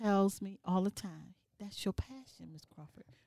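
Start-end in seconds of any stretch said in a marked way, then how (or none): 1.6-3.0 soft, low, tender voice. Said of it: "I had a former principal who tells me".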